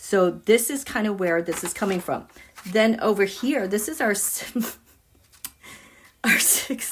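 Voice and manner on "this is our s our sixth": words spoken while giggling and laughing. Pointing to the chart's sixth house, laughing while talking. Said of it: "I'm laughing".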